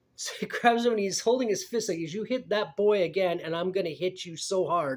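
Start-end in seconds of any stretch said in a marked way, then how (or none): 2.0-5.0 put-on hint of an American southern accent. Retelling what a man said while holding his fist up, in a near-southern accent. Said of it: "he said it in this almost sound like a southern accent".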